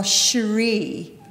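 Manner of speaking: snooty, sneering, disdainful, looking-down delivery. Imitating people who finally say the name right, mock-sneering. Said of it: "they'd say it with a kind of curled lip".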